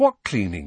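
plain reading voice

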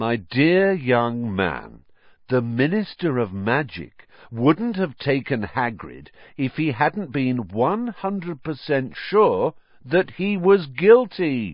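high, patronizing, condescending explaining tone. Lockhart addresses a young man, as if explaining that one and one make two. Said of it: "in the tone of someone explaining that one and one made two".

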